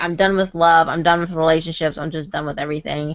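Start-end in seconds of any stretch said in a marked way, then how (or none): none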